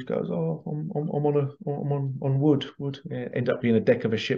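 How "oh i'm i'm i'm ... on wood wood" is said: slow, tearful, halting, broken and repeated words. Retelling what she answered, crying, when asked where she was: imitating someone crying. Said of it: "immediately she was crying her eyes out".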